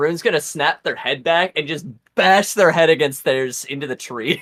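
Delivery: ordinary delivery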